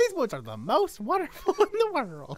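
put-on twangy female voice, swooping. Trying out a voice, the speaker does a put-on female voice with twang. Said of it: "trying to do like a female voice with some tang to it".

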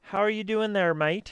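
put-on Australian accent. Reading a game character's greeting aloud: Australian accent. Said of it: "she sounds like a Australian".

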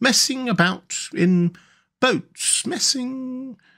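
very high, slow, drifting, dreamy musing. The water rat, rowing, goes on talking to the mole: dreamy. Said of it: "he went on dreamily".

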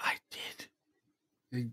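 faint, barely audible whispered man's voice. Replaying a recording for Don, echoing the voice heard on it: whispery man's voice. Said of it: "that whispery man's voice like".

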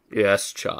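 put-on low, deep character voice. Voicing a character while sick, in a put-on deep voice. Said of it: "doing deep voices is harder when you're sick".

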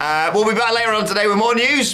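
cheerful announcer tone.

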